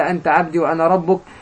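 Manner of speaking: normal talking voice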